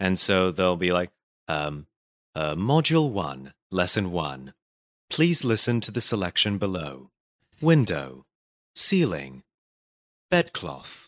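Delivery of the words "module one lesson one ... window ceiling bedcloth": put-on English accent, slower. Demonstrating a recorded english lesson for hong kong students, in an english accent. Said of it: "they want me to do an English accent".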